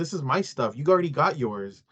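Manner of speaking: ordinary talk, nothing marked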